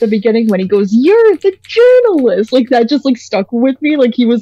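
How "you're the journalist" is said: very high, excited, perky exclaim. Praising a performance and imitating the character Filbo perking up. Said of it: "the way that he perks up".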